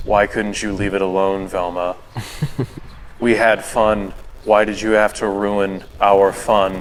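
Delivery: flat, dead, deadpan, level monotone drone. Retelling a dark cartoon video, quoting the character who chomped Shaggy: flat monotone voice. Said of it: "it's just like this monotone voice".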